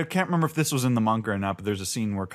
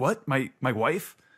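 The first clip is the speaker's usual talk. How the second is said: stunned, shocked, disbelieving reaction; 3 semitones higher than usual. Retelling Kinemon learning where his wife is: imitating shocked reaction. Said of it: "is shocked".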